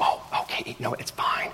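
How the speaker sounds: slow, very quiet, barely audible hushed whisper. Retelling her reply when the speaker asks to return something, retelling a whisper. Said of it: "And we're both whispering".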